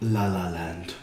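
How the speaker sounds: awards-show announcer voice. Announcing the movie title as read at the Oscars: Faye Dunaway voice. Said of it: "I'm gonna do my best Faye Dunaway voice".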